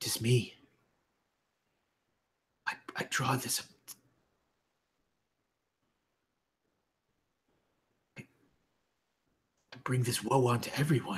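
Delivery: soft, hushed whisper. She stands and speaks so only those closest to her hear, whisper. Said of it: "She whispers".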